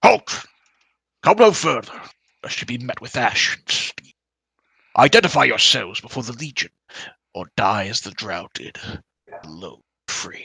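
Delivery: rough, gruff hobgoblin guard voice. Narrating a game, voicing a mean-looking swordsman halting the players, gruff voice. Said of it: "he says in a gruff voice".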